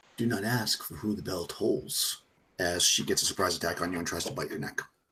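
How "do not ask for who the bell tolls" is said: intimate, close female half-whisper. Game narrator voicing a woman half-whispering into a player's ear, half-whispering female voice. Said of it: "you hear a whisper in your ear, a female voice".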